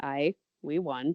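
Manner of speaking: mock level, flat, expressionless deadpan. Retelling how a voice actor delivered a victory line, imitating a deadpan line. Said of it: "Just like deadpan".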